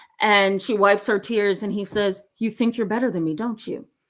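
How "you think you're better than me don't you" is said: mock very calm voice, faster pace. Telling a story, quoting a father speaking to his daughter, retelling a very calm voice. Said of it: "he said in the calmest voice ever".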